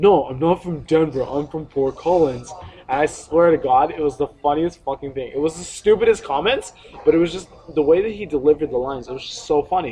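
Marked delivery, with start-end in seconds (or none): 0.0-2.5 mad, fed-up, irritated, angry tone. Retelling a girl's reply at a party, imitating someone mad. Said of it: "she's just getting really mad".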